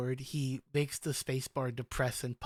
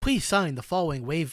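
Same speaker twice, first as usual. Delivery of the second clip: perky, cheerful, raised chipper voice; 3 semitones higher, 7 dB louder than usual. Game master voices a character addressing the players, a bit more chipper voice. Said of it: "in a bit more chipper voice".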